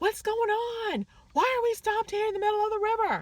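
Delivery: very high, shouted yell. Retelling being on a boat stopped mid-river, retelling a yell. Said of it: "So I'm yelling".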